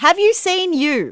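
high, loud, incredulous, gushing tone.

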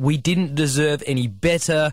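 ordinary delivery

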